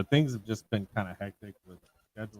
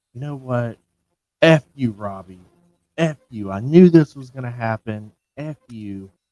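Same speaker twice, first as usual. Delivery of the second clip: fed-up woman yelling furiously, very loud; 3 semitones higher, 12 dB louder than usual. Retelling how she finally lost patience with the drunk man, imitating an angry woman. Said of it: "she gets pissed, and she's like".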